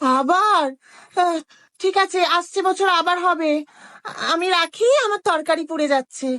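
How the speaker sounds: high busybody middle-aged woman voice.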